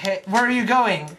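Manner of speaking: normal talking voice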